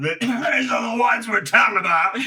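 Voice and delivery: shrill, very loud, very high blurted yell. Acting out a whisper that fails after a coughing fit: yelling. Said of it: "You yell".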